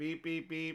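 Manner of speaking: imitated robot voice. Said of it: "Her voice is robotic at times".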